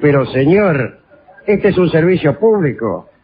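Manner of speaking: lofty, grand national-hero statesman manner. Speaker retelling their reply to a bus driver who refused change, in a grand statesman voice. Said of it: "Con voz de prócer".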